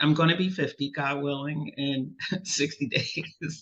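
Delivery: talking while cracking up, laughing through the words. A podcast host telling the audience about turning fifty soon, laughing while talking. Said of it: "And I'm laughing, sorry, audience".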